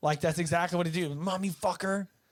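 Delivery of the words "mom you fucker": put-on all-out furious bellow, top of the lungs. Describing how he yells at Mom over a missing movie: retelling a full-lung yell. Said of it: "fucking yelling at the top of his lungs".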